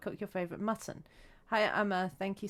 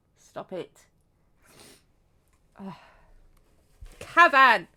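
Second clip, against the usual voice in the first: crying, tearful voice, much louder; 13 dB louder than usual. Crying while thinking of their mum, telling Cavan to stop: crying. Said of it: "I'm crying".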